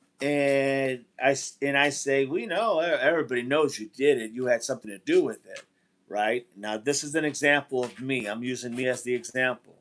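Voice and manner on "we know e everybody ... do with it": ordinary talk, nothing marked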